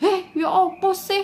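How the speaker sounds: very high, drawn-out, loud, heated, emotional cry. Contrasting Blitar and Malang speakers, imitating Malang people: mock-emotional Malang tone. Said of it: "orang Malang terdengar lebih sedikit emosional".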